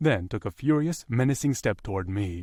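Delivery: plain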